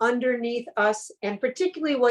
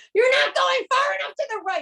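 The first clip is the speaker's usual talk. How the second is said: shrill, very high, anxious, panicked scream. Driving with her dad in the back seat, speaker retells his words, retelling dad's scream. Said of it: "he's screaming".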